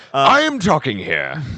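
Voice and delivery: very loud, high-pitched, slow, drawn-out yell. Imitating the director yelling at the speaker: imitating someone yelling, with an accent. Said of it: "I like the accent".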